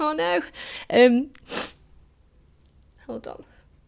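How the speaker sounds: high, slow, voice breaking, near tears. Answering a question about a colleague she loved, about to cry. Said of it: "I'm gonna cry now".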